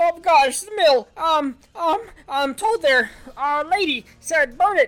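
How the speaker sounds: shrill, very high, stuttering, stammering shout. Asked why he is trying to burn the mill, he answers shouting and stuttering. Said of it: "he begins to shout and stutter".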